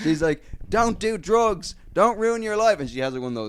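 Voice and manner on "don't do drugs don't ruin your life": very high, shrill, raised ranting scream. Describing a woman whose son died, the speaker is imitating a woman screaming. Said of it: "she's just screaming like at everyone".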